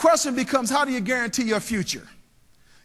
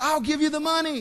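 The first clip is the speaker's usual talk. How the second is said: high call out across a distance. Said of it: "he says".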